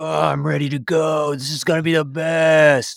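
said mid-yawn, mock yawning. Introducing a friend to the audience, imitating James Meehan mid-yawn. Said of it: "he was kind of in this mid-yawn".

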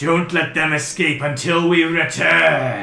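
loud, high, slow bellow.

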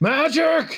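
loud high yell.

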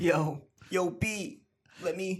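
very slow stretched voice. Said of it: "You gotta talk like [name]".

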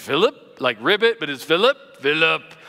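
froggy, croaky throat. Speaker imitates his pastor saying his name, imitating Pastor Dave's froggy voice. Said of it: "It sounded like he had a frog in his voice".

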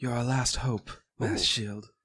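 soft, hushed whisper. Game master voicing a healer speaking to a player's character after healing him, whispering. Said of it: "You hear her whisper".

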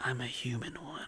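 hushed, menacing, seductive, sexy whisper. Coached to redo a line, a speaker tries it again; terrifyingly sexy voice. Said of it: "so terrifyingly sexy".

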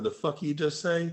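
hushed, hostile, confrontational, furious snapped delivery. Retelling [name]'s taunt after a missed lift, acting out his own angry snap. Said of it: "Here comes the crazy side".

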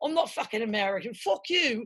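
put-on English accent. Retelling walking around england with companions, in a fake english accent. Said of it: "put on our fake English accents".

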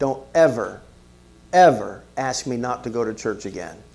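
put-on very stern, firm, no-nonsense fatherly voice. Retelling a father's warning never to ask to skip church: imitating stern speech. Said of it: "he said this very sternly".

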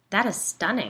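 ordinary delivery

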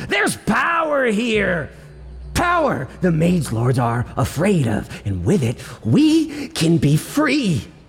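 furious outburst with growl, high swooping pitch. Voicing a character who shouts back at the listener: angry shouting. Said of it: "as he angrily shouts".

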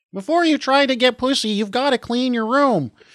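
weak, barely-there, very high frog puppet voice. Asked to talk like Kermit the Frog, the speaker tries it: weak Kermit voice. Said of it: "That was barely Kermit the Frog".

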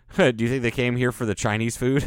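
ordinary talk, nothing marked

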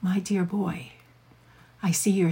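seductive, erotic interrogator voice. Showing how to check on a restrained partner during an interrogation scene: erotic interrogator voice. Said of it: "you can do it very, very erotically in an interrogation scene".

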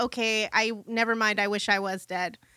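normal talking voice

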